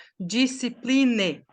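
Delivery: "discipline" said with Brazilian Portuguese accent sounds. English pronunciation lesson, showing how nobody would say it: Brazilian Portuguese accent on discipline. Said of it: "Ninguém vai falar como nós falaríamos".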